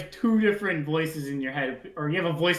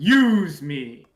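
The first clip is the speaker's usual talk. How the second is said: big, loud, resounding, booming elk voice; 6 dB louder than usual. Game narrator voicing a word shouted in a character's head, in a booming voice. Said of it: "In like a booming voice".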